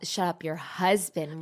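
normal talking voice

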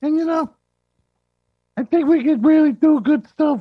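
muffled as through a mask. Pitching show ideas to his co-hosts while wearing a mask, muffled voice. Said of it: "Why is your voice muffled?".

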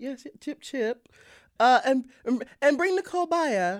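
terrible put-on English accent. Inviting a guest onto the podcast, in a terrible english accent. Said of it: "in a terrible English accent?".

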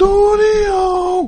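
high, shouted radio announcer voice. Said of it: "uh, radio voice".

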